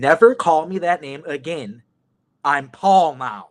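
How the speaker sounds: annoyed, pointed, slow, angry tone. Retelling how someone angrily refused to be called by an old name: imitating an angry retort. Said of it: "he looks at me pissed".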